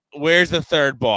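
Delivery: loud yelling, hollered from afar. Retelling a round on the green, the speaker re-enacts yelling about the missing ball: retelling a yell. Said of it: "I'm yelling".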